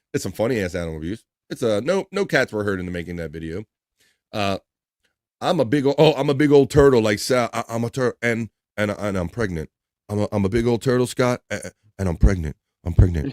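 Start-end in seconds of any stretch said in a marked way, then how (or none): 5.4-13.3 put-on crazed, psycho voice, lower. Imitating a hypnotized man who thinks he is a pregnant turtle: imitating Sal Governale hypnotized. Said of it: "I can't even sound as psycho as Sal Governale did".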